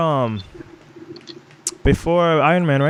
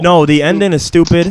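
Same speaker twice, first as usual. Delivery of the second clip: ordinary talk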